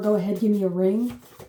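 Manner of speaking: ordinary talk, nothing marked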